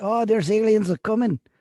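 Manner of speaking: unconvincing put-on Mexican accent that comes out Southern. Acting out what people say about aliens, in a bad fake Mexican accent. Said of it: "That was like a southern".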